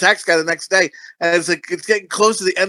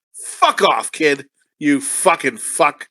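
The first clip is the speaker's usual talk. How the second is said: mock-angry voice, lower pitch; 4 semitones lower than usual. Retelling a customer-service run-in with a kid: reenacting his own angry outburst. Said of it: "I get angry at things sometimes".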